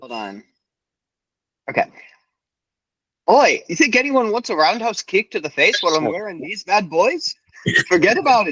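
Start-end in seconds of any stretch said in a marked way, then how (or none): 3.3-8.5 bad Irish accent, pitched up, wandering off. Given the prompt to do a line in an irish accent, bad irish accent. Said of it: "year four in an Irish accent".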